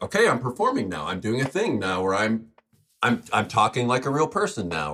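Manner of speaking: ordinary talk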